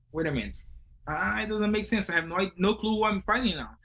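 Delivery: ordinary talk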